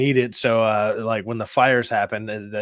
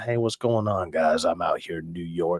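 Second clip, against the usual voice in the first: low, silky-smooth, easy delivery; 5 semitones lower, 3 dB quieter than usual. Showing what an awesome voice on a mic sounds like, imitate Angel's silky smooth voice. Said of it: "This guy's just like he's just silky smooth".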